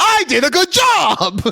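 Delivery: high, slow yell mixed with laughter. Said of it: "I don't know why I'm yelling".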